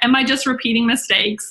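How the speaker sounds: normal talking voice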